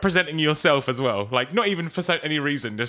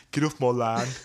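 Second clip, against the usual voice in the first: put-on accent that comes out sounding Birmingham; 3 semitones lower than usual. Doing the inbred woods-family voice for the other speaker, accent that sounds birmingham. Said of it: "No, that's Birmingham".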